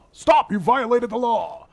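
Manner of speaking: high-pitched stern guard voice. Retrying a voice they admit they can't quite reach, attempted guard impression. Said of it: "I can't get there".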